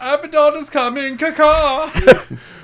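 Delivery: worst-ever albatross voice, very high, shrill and loud. After a player asks for him to be like an albatross, speaking as a bad albatross. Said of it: "the worst albatross I've ever heard".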